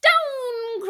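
very high witch cry, "down" stretched long. Reading a storybook aloud, give the witch's line as she cries out. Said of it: "cried the witch".

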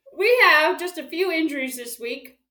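very loud, high voice, talking through a mouthful. Giving the week's injury update with a donut in the mouth, talking with mouth full. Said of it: "Is this disgusting? Sorry if it is".

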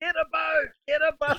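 easy, light, mild high-pitched calling out. Retelling how they shouted as someone drifted further away, at top of voice. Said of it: "When I was at the top of my voice".

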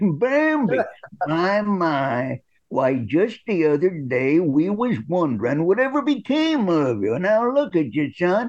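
put-on elderly man voice, drawn-out "my". Recalling an audition line for an old man role, old man voice. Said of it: "he sounds like an old man".

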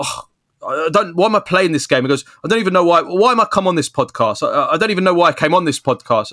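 play-acted high, snapped angry outburst, losing it. Retelling a podcast guest snapping after repeated questions, mock angry outburst. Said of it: "he just snapped and he goes".

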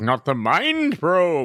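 slow, grand, stately pageantry voice, like a knight. Podcast host showing how a knight would say the show's title, knightly pageantry voice. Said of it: "Isn't that how a knight would say it?".

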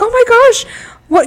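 mock very high, loud, alarmed freak-out. Retelling a contestant's reaction to a clue: imitating Myrna freaking out. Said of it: "she was, like, freaking out".

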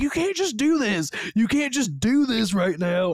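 high, play-acted mad, furious shouting. Retelling their reaction while watching a movie, reenacting screaming at the TV. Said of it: "I was literally screaming at the TV".

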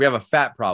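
usual speaking voice

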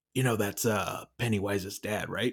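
whispering. Recounting leaning over to their sister at a movie, retelling a whisper. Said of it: "I just like whispered to her".

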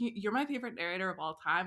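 ordinary talk, nothing marked

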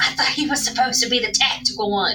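stage half-whisper, said as an aside. Retelling how they half-whispered to Oswald about a teammate: retelling a half-whisper. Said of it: "and then I whisper to Oswald".

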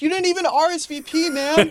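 very high, stretched-out yelling. Acting out an imagined party scene, a guy yelling from the back. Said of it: "yelling from the back".

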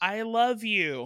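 small, sudden, high-pitched cry. Retelling someone screaming during an applause break, retelling a scream. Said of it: "she just screams".

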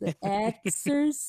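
sarcastic, mocking tone with audible air quotes. Repeating the word exercises so listeners hear the quotes, sarcastic scare-quote tone. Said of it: "I hope you guys heard the quotes I was putting in my voice".

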